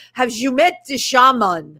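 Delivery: put-on French-accented speech. Retelling a filmmaker friend coming over at a gallery opening, in Patrick Moray's French accent. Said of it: "in his French accent".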